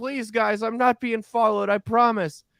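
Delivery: acted-out very high yell. Retelling a woman who ran up to their car, retelling a woman yelling. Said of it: "like yelling through the window".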